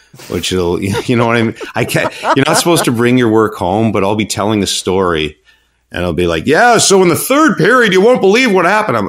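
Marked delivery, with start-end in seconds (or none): 6.5-9.1 very high, loud sports play-by-play broadcaster voice. Showing how he tells stories at dinner, in his broadcast voice. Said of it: "I talk in my broadcast voice at dinner".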